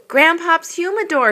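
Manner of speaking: very high-pitched, loud exclamation. Seeing his late grandpop's cigar jar pulled from a sack, he is exclaiming. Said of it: "he exclaimed".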